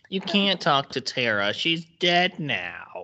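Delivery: mock nasal girl's voice, nasally. Speaker recalling an annoying girl from a show: imitating a nasal girl. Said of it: "she like talks like this like very like nasally".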